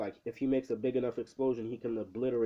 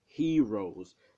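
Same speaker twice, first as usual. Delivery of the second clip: strong emphasis on HEROES; 5 dB louder than usual. Retelling a character mocking the heroes: imitating stress on heroes. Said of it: "Keeps putting, like, the emphasis".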